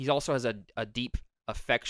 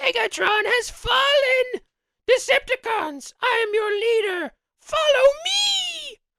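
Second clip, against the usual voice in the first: very high, very loud robot villain voice; 10 dB louder than usual. Asked by the other speaker for their best Starscream impression; Starscream impression. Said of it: "you did Armada, I did G one".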